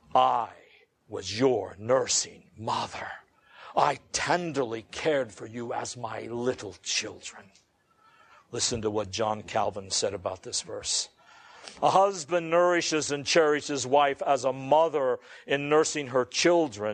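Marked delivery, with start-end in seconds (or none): 0.1-7.4 low, deep, manliest voice. Speaker quoting Paul's words to the Thessalonian Christians, Paul in a more manly voice. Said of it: "Paul said in an even more manly voice".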